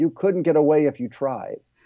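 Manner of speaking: put-on fierce voice. Recalling Ram Dass looking at them on the corner, mock-fierce Ram Dass impression. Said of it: "in this sort of fierce voice".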